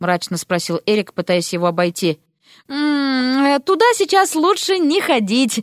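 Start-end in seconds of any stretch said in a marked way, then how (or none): 2.7-5.6 embarrassed, sheepish, slow, "Туда" drawn out. Narrator reading Polya's reply as he blocks Eric from the bedroom, embarrassed mutter. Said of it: "смущенно пробормотал Поля".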